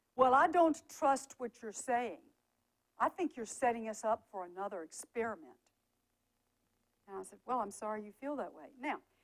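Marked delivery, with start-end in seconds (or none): 0.2-5.6 mock, very loud, blurted-out voice. Speaker recounts a man who kept speaking over him: retelling a very loud voice. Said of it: "he would say right out loud in this very loud voice".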